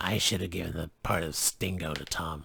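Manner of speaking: rough, rasping, raspy delivery. Retelling what Paul said about casting the play: Paul's raspy voice. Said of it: "said in his raspy voice".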